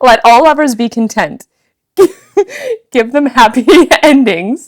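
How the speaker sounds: reading through laughter. Giving a passionate reading of a Rumi poem aloud, laughing while reading. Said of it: "it's making me laugh".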